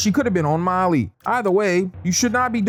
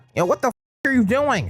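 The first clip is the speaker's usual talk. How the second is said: put-on nerd voice, higher; 5 semitones higher than usual. Acting out a movie scene, retelling a character's line: imitating a nerdy voice. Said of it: "that nerd-ass voice you're using".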